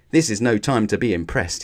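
ordinary talk

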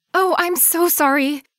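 high-pitched, breathless, winded, stuttering delivery. Nina apologizes after knocking over her elderly neighbor, stammering and out of breath. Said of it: "Nina stammered, attempting to catch her breath".

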